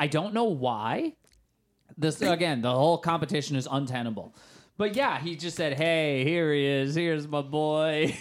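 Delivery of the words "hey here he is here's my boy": put-on slow, stilted, wooden line reading with "boy" drawn out. Quoting a movie actor's line: imitating a terrible line delivery. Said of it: "the worst delivery in any movie".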